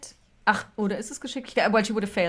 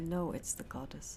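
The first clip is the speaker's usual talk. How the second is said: hushed whisper, much quieter; 4 semitones lower, 12 dB quieter than usual. A character leans in close to Aisling, whispering in your ear. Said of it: "she leans in and she whispers in your ear".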